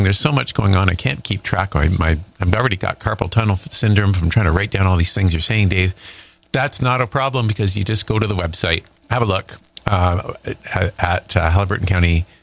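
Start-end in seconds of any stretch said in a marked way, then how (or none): none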